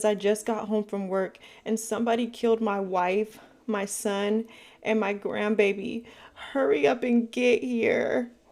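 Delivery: mock crying, frantic, very upset, drawn out. Retelling a phone call to the police: imitating a frantic crying caller. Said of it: "he's crying, he's frantic, he's really upset".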